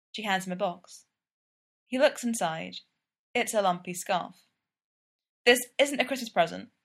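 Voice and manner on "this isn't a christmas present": hasty, quick, high, hurried delivery. Sid hands Gino a box and explains it to him, said quickly. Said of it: "Sid says quickly".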